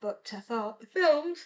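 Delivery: speaking through a yawn. Recommending the Hunger Games films, the speaker starts yawning mid-sentence. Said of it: "I'm yawning".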